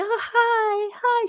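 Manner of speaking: sweet, very high voice, hi drawn out. Describing how an alter speaks when fronting, imitating Symphony's sweet voice. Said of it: "She's like very sweet, very uh higher pitched voice".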